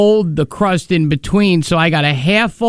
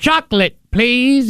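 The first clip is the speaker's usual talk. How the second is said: put-on cat voice, much higher; 6 semitones higher than usual. Retelling what a man in a cat suit would say, cat voice. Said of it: "in his cat voice".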